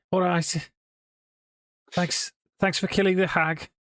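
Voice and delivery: put-on light Liverpool Scouse accent, pitched very high. Storyteller voicing a spokes raven freed from the hag's cages, in a mild scouse accent. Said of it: "he will have a mildly Scouse accent".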